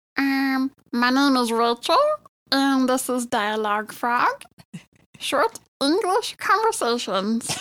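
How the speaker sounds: funny, sweet, cute small-critter voice. Asked for example sentences in her funny voice, she answers: cute little-kid creature voice. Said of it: "can you give us some example sentences in your funny voice".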